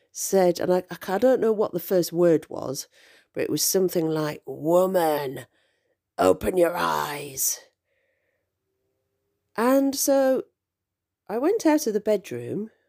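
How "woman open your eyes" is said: put-on haggard witchy voice, slower. Retelling a voice heard in the upstairs bedroom, imitating a witchy, haggard voice. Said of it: "in a very kind of witchy, haggard kind of voice".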